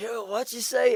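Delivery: full-on scream, pitched very high. Retelling what they screamed out in the street: imitating own screaming. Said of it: "And I was screaming it".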